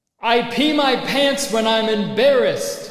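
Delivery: screaming at the top of the lungs. Joking about an app for anonymous secrets, screaming a secret at the top of lungs. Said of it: "You literally just screamed at the top of your lungs".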